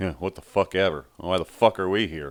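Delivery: put-on irritated attitude. Retelling how the Usos came out at a house show: imitating the Usos acting pissy. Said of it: "they're all pissy".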